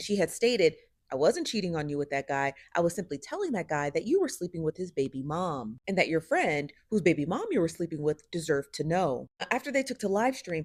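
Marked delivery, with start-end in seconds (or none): none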